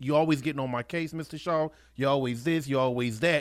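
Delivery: normal talking voice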